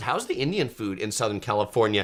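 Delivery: plain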